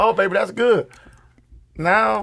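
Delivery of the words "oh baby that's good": usual speaking voice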